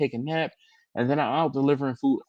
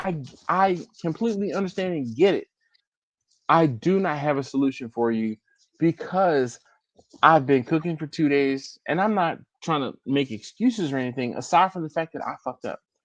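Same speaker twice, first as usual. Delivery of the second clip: ordinary talk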